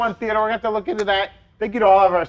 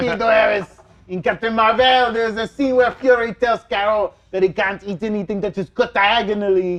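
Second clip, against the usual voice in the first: put-on French accent. Reading a viewer's message aloud after being asked for it: French accent. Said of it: "Apologies to all of our French fans out there".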